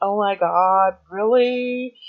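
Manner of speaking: exaggerated, drawn-out valley-girl voice. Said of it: "when I'll go into valley mode".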